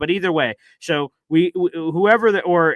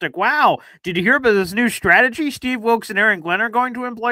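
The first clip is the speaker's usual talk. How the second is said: dripping sarcasm with feigned, higher-pitched amazement; 7 semitones higher than usual. Retelling own earlier reaction to a quote, imitating own past sarcasm. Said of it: "this was my sarcastic".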